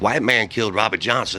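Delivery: ordinary talk, nothing marked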